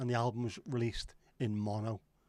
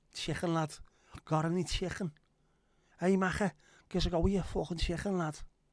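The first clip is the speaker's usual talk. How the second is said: broad Liverpool Scouse accent, pitched up; 7 semitones higher, 4 dB louder than usual. Demonstrating a go-to phrase for slipping into an accent: scouse accent. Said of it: "doing a Scouse accent".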